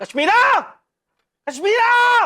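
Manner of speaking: shouting. After welcoming a guest in, calling out for someone by name, shouting. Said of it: "क्यों चिल्ला रहे हो?".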